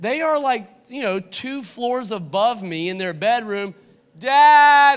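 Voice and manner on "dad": very loud, long, high, drawn-out holler. Retelling a son calling from two floors above: imitating a faint little cry. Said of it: "hear this faint little cry".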